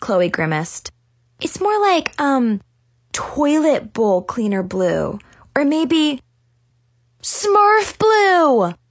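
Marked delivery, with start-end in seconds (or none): 1.4-8.7 eager, thrilled, excited, high and drawn out. Narrator voicing Chloe and Zoe reacting to the narrator, excitedly. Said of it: "Chloe and Zoe said excitedly".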